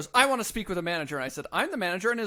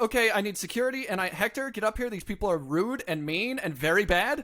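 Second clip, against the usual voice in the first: usual speaking voice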